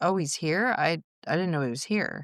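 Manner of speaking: ordinary delivery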